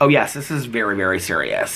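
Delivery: ordinary delivery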